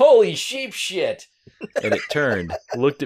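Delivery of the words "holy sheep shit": very high, very loud, shrill, full-throated yell. Reading a silly story aloud, seeing something creepy at camp: yelling. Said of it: "I yelled".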